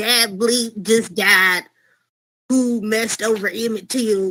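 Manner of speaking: leaning into a Southern-sounding voice. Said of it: "I'm gonna try to do my best [name] impersonation".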